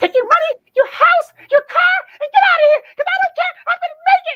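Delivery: loud theatrical high-pitched exclamation. Performing a dramatic monologue from The Color Purple: imitating a Color Purple woman. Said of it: "I sounded like her and my mannerism was like her".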